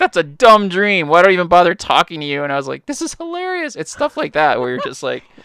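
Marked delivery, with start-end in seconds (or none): 0.0-2.4 angry, high-pitched, loud scolding yell. Retelling how one man yelled at another: imitating someone yelling. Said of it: "And he's yelling at him".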